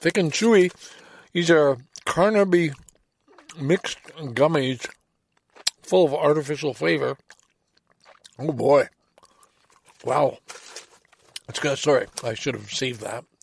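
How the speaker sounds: talking while chewing, mouth full. Tasting a gummy while talking: chewing while talking. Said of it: "Do you mind if I chew one?".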